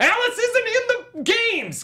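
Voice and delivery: high-pitched, loud, angry ranting outburst.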